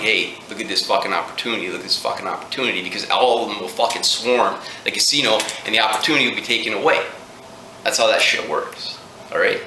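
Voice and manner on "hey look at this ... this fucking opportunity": ordinary talk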